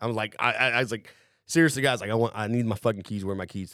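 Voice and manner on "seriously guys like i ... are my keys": irritated, insistent, angry, pissed-off tone. Retelling demanding keys back from the others: imitating own angry demand. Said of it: "I'm getting pissed".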